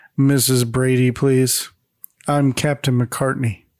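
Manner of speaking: underwhelmed, unimpressed, low monotonous drone. Narrating a story, a police officer at the door introduces himself: monotonous, underwhelming tone. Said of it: "says in a monotonous and underwhelming tone".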